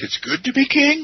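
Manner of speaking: king lifted with rising, questioning pitch. A first try at the line that sounds like a question: rising pitch on "king". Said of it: "it usually comes out like a question".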